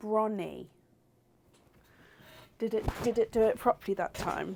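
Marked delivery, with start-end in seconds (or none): 0.0-0.7 slow, careful, drawn out syllable by syllable. Trying a name a different way: 'bronny' said slowly. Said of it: "what if I say it slowly?".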